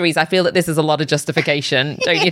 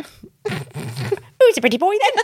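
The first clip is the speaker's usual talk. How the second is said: put-on parrot voice, much higher pitch, much slower; 14 semitones higher than usual. Showing the bit where you pretend to be a parrot. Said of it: "you pretend to be a parrot".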